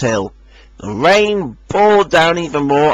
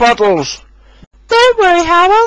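smiling delivery, very high-pitched voice; 4 dB louder than usual. Reading a story, Rosie reassures Harold: Rosie speaking with a smile. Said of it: "smiled Rosie".

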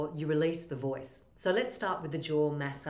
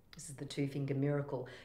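ordinary talk

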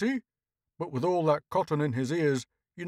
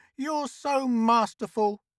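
put-on wheezing delivery in a high, wheezy voice; 7 semitones higher than usual. A woman who always gets her way speaks to a reluctant man, wheezing. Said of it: "she wheezed".

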